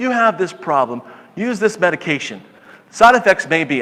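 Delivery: plain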